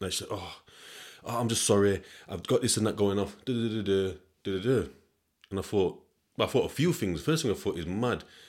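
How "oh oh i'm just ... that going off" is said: near-tearful, almost crying voice. Retelling a woman's apology in a car park dispute: imitating someone almost crying. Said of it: "it was almost like she was crying without crying".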